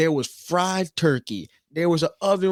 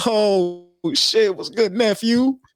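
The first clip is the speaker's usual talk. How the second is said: put-on, very slow, high, drunk voice; 6 semitones higher, 4 dB louder than usual. Retelling a family visit, the speaker quotes his uncle greeting him, imitating drunk uncle. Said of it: "Uncle was drunk as shit".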